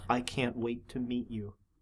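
deep, very low half-whisper. The narrator voices the Dark Pharaoh leaning close to your ear: Dark Pharaoh half-whisper. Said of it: "The Dark Pharaoh whispers to you".

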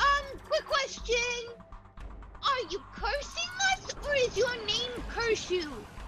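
very high, sweet, squeaky character voice.

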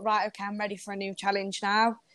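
ordinary delivery

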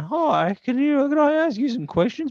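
mock awkward cracking voice. Describing walking up to strangers to ask questions, imitating own voice cracking. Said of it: "you sound awkward when your voice breaks".

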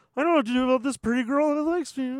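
mock dim-witted, dumb-person put-on voice. Summing up a character's storyline to co-hosts, in a stupid person voice. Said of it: "I love your stupid person voice".

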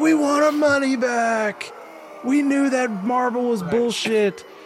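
very high-pitched, loud, forceful crowd-style shout. Describing a crowd pushing in, imitating a crowd member. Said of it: "they're leading the charge".

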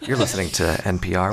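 low, soothing radio host voice.

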